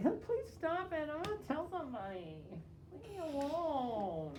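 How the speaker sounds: very high, weak, swooping, whimpering whine. Showing the whiny way the speaker did not say it: mock-whiny pleading. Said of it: "a whiny".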